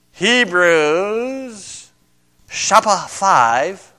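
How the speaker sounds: put-on Japanese accent, chapter said as shapa. Speaker giving a bible reference to listeners: put-on japanese accent. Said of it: "That's my Japanese accent".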